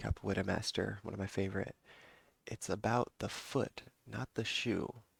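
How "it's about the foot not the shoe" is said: ABOUT stressed, drawn out slowly with rising lift. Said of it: "like, uh, Mestre Pinocchio said".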